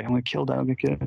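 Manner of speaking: mock mumbled delivery. Retelling what a guy on set kept saying while everyone stared, imitating a mumbled threat. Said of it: "basically just like mumbling and saying".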